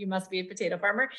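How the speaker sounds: plain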